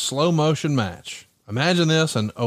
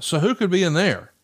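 mock-taunting tone; 4 semitones higher than usual. Retelling how a wrestler mockingly spoke to a rival on the ramp: retelling a mocking line. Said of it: "really mockingly".

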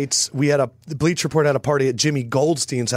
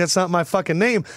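normal talking voice

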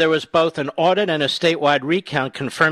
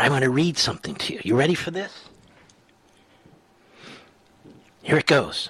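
playful, joking whisper; 4 dB quieter than usual. Telling listeners he is about to read them a headline, in a joking whisper. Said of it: "Maybe I should whisper".

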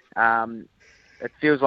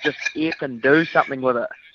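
plain

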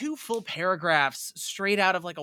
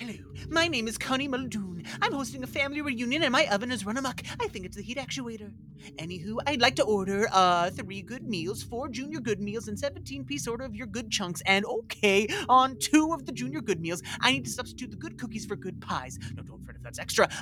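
character voice, starts even, steadily speeding up; 3 semitones higher than usual. Performing a long food order as a character, in Connie Muldoon's voice, speeding up. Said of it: "It speeds up as it goes".

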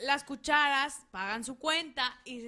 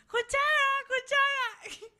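shrill, very high, repeated shouted call; 12 semitones higher, 3 dB louder than usual. Telling a joke, voicing a fork calling after spoons: shouting as the fork. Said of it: "sigue gritando el tenedor".

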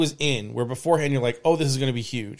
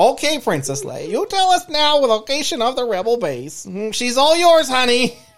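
put-on Minnesota accent, pitched very high; 10 semitones higher, 4 dB louder than usual. Parody scene interrogating a captive princess about the rebel base, minnesota accent. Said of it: "is she from Minnesota?".

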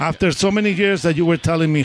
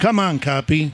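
ordinary talk

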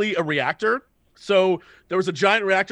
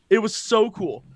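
ordinary talk

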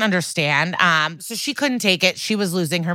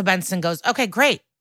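ordinary delivery

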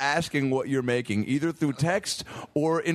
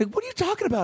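put-on high-pitched kid voice. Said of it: "he's like".

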